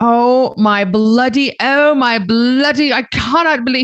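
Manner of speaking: livid, furious, with words very drawn out. Retelling a man's reaction to a late excuse, acting out someone furious. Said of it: "he was so mad".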